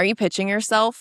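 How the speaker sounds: put-on annoyed tone. Retelling a reply to a man in a message exchange; mock-annoyed question. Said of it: "already was just kind of annoyed".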